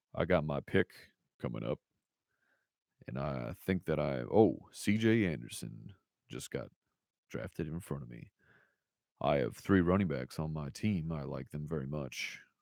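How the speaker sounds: very deep, very low and hushed voice. A streamer during a fantasy draft shows off a very low voice. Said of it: "I can speak in a voice like this that is very low".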